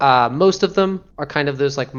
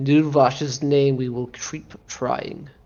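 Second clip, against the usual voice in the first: slow, intoning put-on creature voice. Voicing a mind flayer that speaks telepathically after a failed ritual: mind flayer intoning. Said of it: "telepathically intoning".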